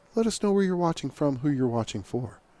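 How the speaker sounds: very quiet, hushed, kept-down voice. Broadcasting from a hushed stadium as the colors are retired, in a quiet voice. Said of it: "I'm talking in my quiet voice".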